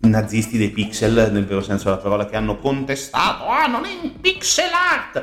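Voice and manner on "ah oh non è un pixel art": very high, querulous, whiny voice. Mocking people who complained about a game's art, in a mock-whiny voice. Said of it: "con questa voce, ovviamente molto querula".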